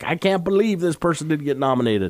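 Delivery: put-on elderly man's voice. Host quotes people upset about Oscar snubs, old man voice. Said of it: "Was that your old man voice?".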